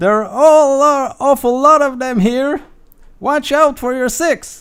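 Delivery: shrill goblin yell, very high and very loud. Narrating a fight, voice the gold-helmeted goblin calling to another goblin: goblin shouting. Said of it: "the goblin with the golden helmet shouts".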